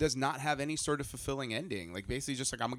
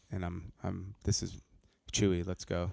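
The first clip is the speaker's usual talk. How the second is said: put-on grumpy monotone, lower pitch; 6 semitones lower than usual. Talking about the trailer, mimic its Han Solo in a grumpy monotone Han Solo voice. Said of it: "I'm going to be monotone and, like, grumpy".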